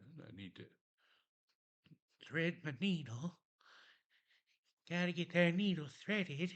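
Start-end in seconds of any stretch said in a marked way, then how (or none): 2.3-6.5 odd, high-pitched put-on voice. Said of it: "I don't know why I'm talking like that".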